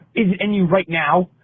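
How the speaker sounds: odd put-on British accent. Retelling a man's reply to an attempt to empathize with him, weird British accent. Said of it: "his weird British accent".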